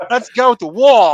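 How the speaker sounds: put-on English accent, slow. Retelling how a friend started talking differently, English accent. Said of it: "he starts telling his English accent".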